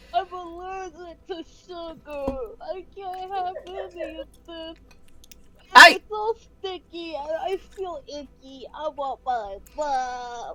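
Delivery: loud, tearful, panicky sobbing, "mom" drawn out. Ronald, an adult man, panicking on noticing the others around him: crying as Ronald. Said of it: "Ronald's crying".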